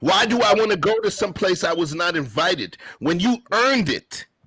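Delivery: heated yelling. Talking in the house with someone who asks why you are being so loud, yelling. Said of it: "why are you yelling in the house".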